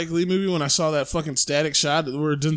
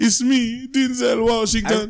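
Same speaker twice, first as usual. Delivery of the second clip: put-on terrible, mangled Jamaican accent, slow, drawn out, high; 7 semitones higher, 4 dB louder than usual. Imitating an actor's terrible Jamaican accent from his first movie. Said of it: "he has a terrible Jamaican accent".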